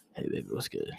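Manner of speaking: whispered, breathy near-whisper. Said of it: "maybe I could be like [name]".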